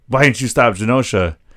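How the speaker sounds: ordinary talk, nothing marked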